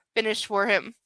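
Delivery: plain reading voice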